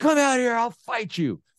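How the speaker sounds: play-acted high, challenging shout. Recounting a man in the plaza challenging him to fight, retelling a man's shouting. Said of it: "And he was shouting".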